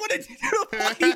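very high-pitched cartoon character voice. Retelling a cartoon scene where a kid ignores the hypnosis: imitating Johnny. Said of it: "he holds up Plank, and he's like".

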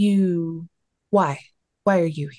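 slow, modulated kind of creature voice. Voicing a creature that orders the player to drop a weapon: modulated creature voice. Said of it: "modulated kind of voice".

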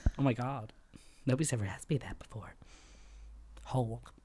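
put-on breathy sexy voice. Playing her on request and answering a question about favorite milk, breathy, sexy Marilyn Monroe voice. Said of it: "I'm all breathy, like sexy".

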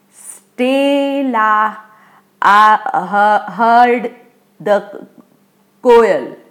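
slow, deliberate, one word at a time. Parvez speaks to Stella near his house, one word at a time. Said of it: "one word at a time".

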